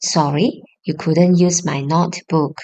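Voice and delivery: ordinary talk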